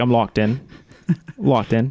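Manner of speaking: put-on Boston-accented delivery. Host recalling what he said whenever he locked in, Boston accent. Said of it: "I did a Boston accent for some reason".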